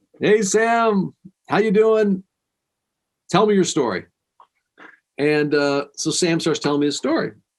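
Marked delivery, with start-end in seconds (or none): 0.2-4.1 bright, pitched-up, fake cheerful put-on voice. Retelling greeting a visitor downstairs: imitating own put-on happy greeting. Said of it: "you put on your happy face".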